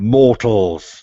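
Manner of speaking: big, loud, ringing, booming bellow. Narrating a scene and voicing the newly described figure, loud shout. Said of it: "he shouts in a uh, in a loud voice".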